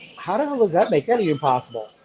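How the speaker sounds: ordinary talk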